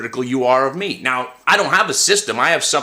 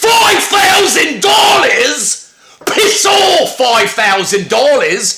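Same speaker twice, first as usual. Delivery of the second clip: very high, very slow, drawn-out put-on Australian accent; 13 semitones higher, 7 dB louder than usual. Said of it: "I might not do the greatest accent".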